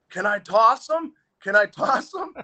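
shrill, very high, rising, drawn-out yell. Retelling a hockey game where a teammate grabbed an opponent: imitating someone yelling. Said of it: "he's yelling at Searing".

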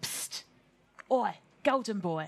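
scruffy, grubby little gnome voice. Game master voicing a gnome on the bank calling to a player: grubby little gnome voice. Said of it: "a grubby little gnome sat on the bank going".

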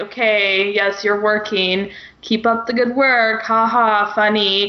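put-on sarcastic voice. Acting out a book character's line about someone working: imitating Thorne's sarcasm. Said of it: "it goes from his sarcasm".

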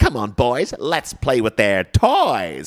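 playful, put-on villainess voice. Showing how an actress played the role, doing a Margot Robbie impression. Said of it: "She was like".

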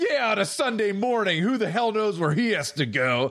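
acted-out, furious, fuming rant, very high-pitched. Retelling what an angry man said to an older lady, imitating a furious man. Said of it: "still all pissed".

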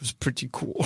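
very quiet, hushed whisper under the breath. Speaking in character after being captured, whispering under his breath. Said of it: "Piran whispers under his breath".

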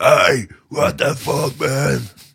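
loud, slow, high shout from a distance.

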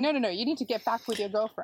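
ordinary talk

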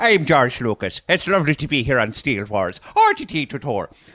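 put-on Irish accent. Joking about an Irish cousin of the director: Irish George Lucas impression. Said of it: "The Irish version of George McLucas".

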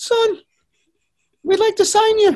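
very high, squeaky voice, pitched way up. Retell what the manager told you in his office, in a squeaky Alan Ball voice. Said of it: "and his squeaky voice said".

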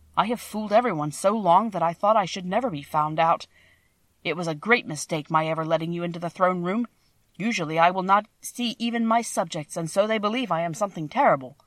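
usual speaking voice

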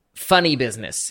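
ordinary talk

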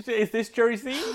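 put-on Bristol accent. Trying out a voice for the Jersey Evening Post news item, in a put-on Bristol accent. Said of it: "That's quite Bristol".

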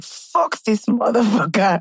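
brief, fed-up, angry outburst, acted out. Describing the angry stage of heartache, acting out anger. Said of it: "there's a brief angry phase".

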